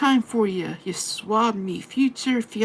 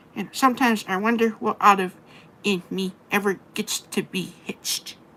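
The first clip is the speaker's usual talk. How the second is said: put-on cartoon character voice. Speaker tells the guys they're trying to talk in Popeye voice. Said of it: "I'm trying to talk in Popeye's voice".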